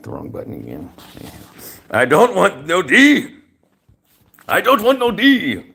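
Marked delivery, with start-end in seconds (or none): 1.9-5.6 high, loud, very slow, drawn-out put-on Greek accent. Speaker quotes another man's words, trying out an attempted Greek accent. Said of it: "I'm trying to use his Greek accent".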